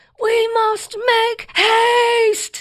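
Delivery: very high, slow, drawn-out yell. Retelling a sister at the bottom of the stairs: imitating a yell. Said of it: "yelling, just like my girls yell".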